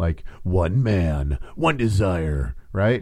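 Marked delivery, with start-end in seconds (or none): 0.4-2.5 drawn-out, slow movie-trailer announcer delivery. Sick, the speaker jokes that their voice now sounds like movies; movie trailer voice. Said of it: "I have that, like, that movie voice now".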